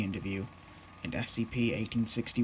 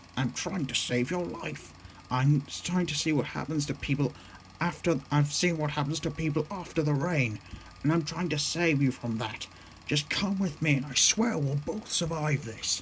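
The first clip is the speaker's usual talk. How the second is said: muffled as if behind a helmet, much higher; 5 semitones higher than usual. A being wearing diving gear urges someone to trust it, muffled through diving gear. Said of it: "and S C P eighteen sixty-one B's speech is muffled by the diving gear that it is wearing".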